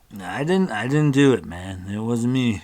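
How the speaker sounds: put-on loud, sloppy drunken slurring of words. Game master voicing a character to the players, slurred drunk speech. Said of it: "he kind of slurs his speech".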